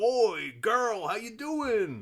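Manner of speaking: put-on fat old man voice, very high, very slow. Greeting two people as a big fat old man who arrives: put-on big fat old man voice. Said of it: "I don't know if he talks like that".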